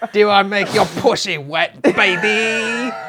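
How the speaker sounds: high-pitched British swinger voice. Friends doing lines from a movie, in an Austin Powers impression. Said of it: "I was about a Randy".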